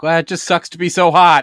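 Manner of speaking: acted loud delivery. Retelling a remark to a coworker, imitating own loud remark. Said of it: "I said it real loud".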